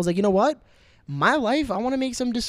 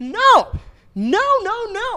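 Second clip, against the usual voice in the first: shrill, very high, very slow drawn-out scream; 13 semitones higher, 5 dB louder than usual. The speaker rejects the idea being discussed, screaming. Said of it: "Sorry for screaming the mic".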